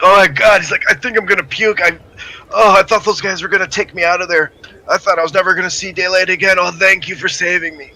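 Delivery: mock hyperventilating panicked man. Voicing a terrified man just rescued at the back door: acting a panicked, hyperventilating man. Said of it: "He's just a total nervous wreck".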